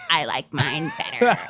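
gremlin-like put-on voice. Retelling what he said after they tried each other's smoothies, in a gremlin voice. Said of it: "in the same gremlin voice".

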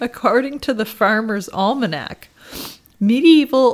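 crying with laughter. Reading an odd word's definition aloud, laughing to tears. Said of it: "I'm just sniffing because I'm now crying".

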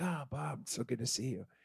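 very soft, hushed, heavy put-on Egyptian accent. Imitating an old acquaintance greeting you warmly after a long while, in a thick egyptian accent. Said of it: "he had a thick Egyptian accent".

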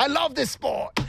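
put-on Australian accent. Imitating an Australian fan watching the Utes: put-on Australian accent. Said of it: "Not bad".

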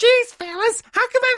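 arch, piercing, very high cartoonish voice.

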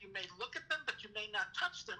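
usual speaking voice

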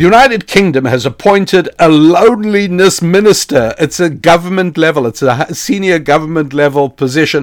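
barely suppressed laughter breaking through. Speaker sharing a story they call unprofessional, holding back a laugh. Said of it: "I'm really trying not to laugh".

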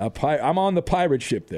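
ordinary delivery

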